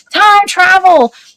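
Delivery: woman's light, high, mild holler. Retelling a woman's voice heard hollering in the woods, imitating a woman's scream. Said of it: "She kind of screamed".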